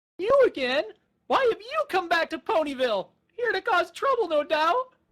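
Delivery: put-on whiny baby dragon voice. Reading a story aloud, voicing Spike confronting Trixie: whiny Spike voice. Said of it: "I love whiny Spike".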